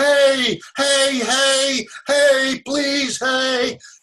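mock very high, slow, shrill, drawn-out yelling. Speaker retells a man calling after them as they walked away, imitating someone yelling. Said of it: "he started yelling".

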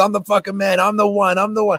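acted, fired-up, high-pitched screaming. Speaker retells a friend waking them at 5 a.m., imitating Ronnie screaming affirmations. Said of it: "just screaming affirmations".

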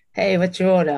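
put-on Australian accent, half American, drifting. Giving an example of greeting Starbucks customers, attempted Australian accent. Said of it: "I say in the Australian accent".

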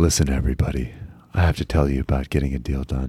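deep, very low on-air broadcaster delivery. Chatting with a co-speaker and slipping into the radio voice. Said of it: "doing the radio voice".

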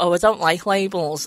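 ordinary talk

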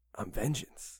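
whispered, breathy caped superhero voice. Quoting a favourite movie line the way it was delivered: Batman voice. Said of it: "the way he delivered it. He's just like".

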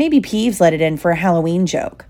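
plain reading voice

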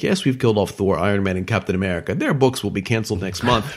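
normal talking voice

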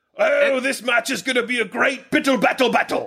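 put-on British accent. Playing along with friends' silly phrase, saying it in a put-on British accent. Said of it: "said in a British accent".

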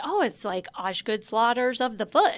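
ordinary talk

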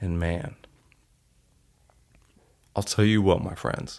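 tearful, choked-up voice catching. Telling listeners about a moment with their son, choked up. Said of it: "you can hear that in my voice".

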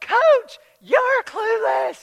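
very high, very loud, shrill holler. Retelling what they wanted to shout back at the coach: imitating a yell back at the coach. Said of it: "I just wanted to yell".

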